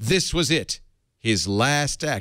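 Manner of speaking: slow, dramatic reading voice.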